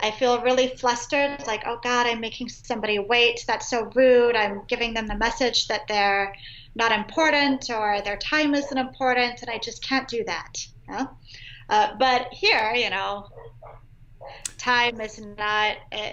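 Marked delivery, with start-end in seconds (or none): none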